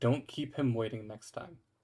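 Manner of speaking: put-on whisper. Retelling what she whispered to you while leaning in, retelling a whisper. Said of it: "it just whispers to you".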